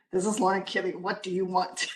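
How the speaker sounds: short, curt, annoyed and upset tone. Acting out answering her phone: mock-upset phone greeting. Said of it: "I already sound like I'm upset".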